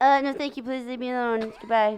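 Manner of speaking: shy, meek, timid, slightly high little voice. Talking for the pet dog Barb, answering questions: Barb's voice, timid. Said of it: "she talks like this".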